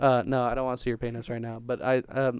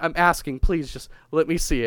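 put-on pleading voice, pitched higher; 4 semitones higher, 3 dB louder than usual. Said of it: "Steve-O was pleading with him".

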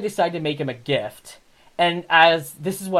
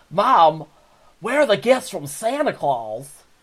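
plain, simple, normal voice; 3 semitones higher than usual. Doing a requested impression of the character Chris asking his mom. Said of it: "you want me to do my Chris impression again?".

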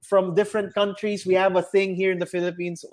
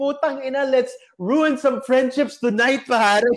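put-on loud tipsy voice, higher pitch; 6 semitones higher than usual. Retelling what Andrin yelled when the bottles came out: imitating Andrin's loud tipsy voice. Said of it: "in his loudest, tipsy voice".

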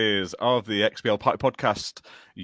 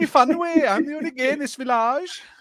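shoddy put-on Welsh accent, very high; 4 dB louder than usual. Showing off accents, a speaker says a line in a really bad Welsh accent. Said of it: "I'll do a really shit Welsh accent".

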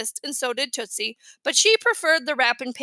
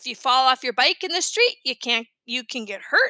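ordinary delivery, nothing marked

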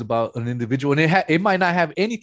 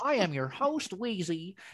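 fake voice, pitched higher and quieter; 5 semitones higher, 10 dB quieter than usual. Showing how a podcast intro might sound in a different voice: put-on Caucasian-sounding voice. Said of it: "maybe if I talk like that".

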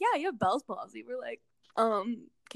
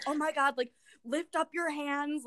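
mock-panicked, frantic voice, pitched higher; 4 semitones higher than usual. Telling another speaker about stroke testing at home, imitating mom freaking out. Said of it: "like freaking out".

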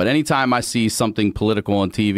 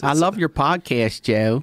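mock Baltimore accent, higher pitch; 5 semitones higher than usual. Imitating a Baltimore fan greeting Joe Rogan: imitating a Baltimore accent. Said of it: "it's a weird accent".

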